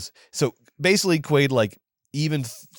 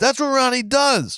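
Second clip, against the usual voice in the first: put-on yelling voice, higher pitch; 12 semitones higher than usual. Retelling a movie scene, imitating Nancy yelling at the horse guy. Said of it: "She's yelling at this guy".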